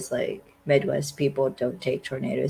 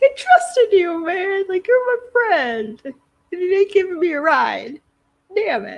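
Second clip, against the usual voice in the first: voice cracking, very high and raised; 7 dB louder than usual. Retelling a character complaining a friend won't give a ride: imitating a cracking voice. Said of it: "His voice cracked".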